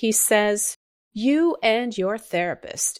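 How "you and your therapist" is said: acted, condescending, belittling, scornful, derogatory tone. Retelling a remark about Ashley's therapist: imitating a derogatory tone. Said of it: "in the most derogatory tone".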